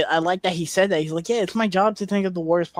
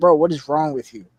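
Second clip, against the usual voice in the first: put-on angry voice; 2 semitones lower, 4 dB louder than usual. Retelling a movie dinner scene: imitating Sue getting mad. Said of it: "Sue gets mad".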